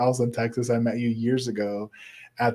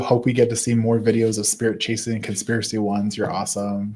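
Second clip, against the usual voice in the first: ordinary delivery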